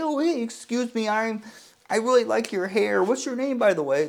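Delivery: high, meek, faltering, unsure and timid voice. Dating advice, imitating a weak guy talking to a girl, mock-timid, hesitant. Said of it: "if you come off as a weak little pussy and you're like".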